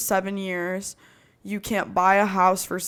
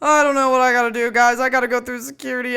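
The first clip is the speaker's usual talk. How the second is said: high, loud, frantic, acted-out panic; 5 semitones higher, 7 dB louder than usual. Retelling a phone call from the security line: imitating own past panic. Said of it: "freaking out".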